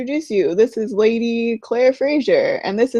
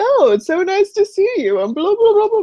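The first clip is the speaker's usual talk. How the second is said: showy, high-pitched, theatrical put-on voice; 9 semitones higher than usual. Retelling a scene, acting out the Duke's greeting: imitating the Duke's theatrical manner. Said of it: "his dukey self".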